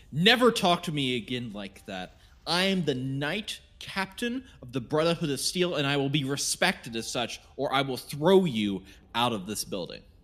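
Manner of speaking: loud, really mean, commanding captain voice. Playing the knight captain of the brotherhood of steel, threatening someone; really mean. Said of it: "I gotta stop being so cheerful and be really mean".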